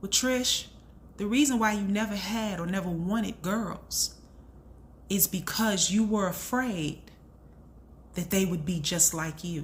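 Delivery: ordinary delivery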